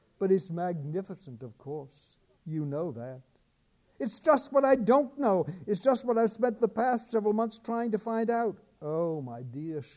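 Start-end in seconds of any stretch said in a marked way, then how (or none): 8.8-9.8 sad, soft murmur full of sorrow. A woman answers a worried speaker, murmuring sadly. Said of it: "she murmured, shaking her head sadly".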